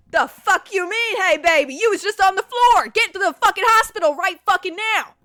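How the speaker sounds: mock raging, high, furious, very loud scream. Retelling a phone call to her dad, reenacting yelling angrily. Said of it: "I'm I'm yelling at this man".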